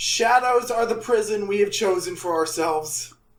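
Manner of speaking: ordinary talk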